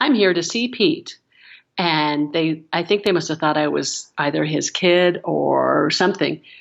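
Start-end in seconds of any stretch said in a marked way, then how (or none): 0.0-1.2 put-on self-assured tone with a higher-pitched voice. Recounting walking into a golf shop to talk their way in, putting on a confident voice. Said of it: "in my most confident voice".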